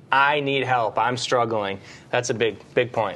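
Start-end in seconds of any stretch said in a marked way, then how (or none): none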